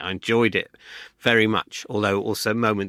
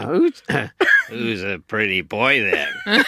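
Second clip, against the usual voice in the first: swooping mob-boss style parrot voice; 3 dB louder than usual. Given the prompt, speaking to David, in a Mafioso parrot voice. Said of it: "Mafioso parrot".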